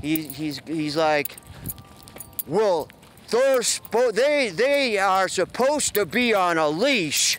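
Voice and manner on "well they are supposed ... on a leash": mock yelling, higher pitch. Retelling what a guy yelled during their argument; retelling a yell. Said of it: "The guy now he's yelling".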